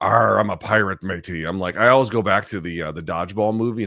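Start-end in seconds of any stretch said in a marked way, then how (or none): 0.0-1.4 put-on pirate voice, louder. Mimicking how people respond to a pirate gimmick, in a pirate voice. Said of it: "But the pirate gimmick".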